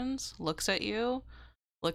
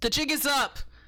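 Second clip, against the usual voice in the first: loud, high shout in a put-on voice; 6 semitones higher, 6 dB louder than usual. Voicing a man in the scene who shouts a line: shouting in character. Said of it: "He shouts".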